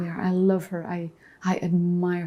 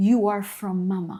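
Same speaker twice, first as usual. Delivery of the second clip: ordinary talk, nothing marked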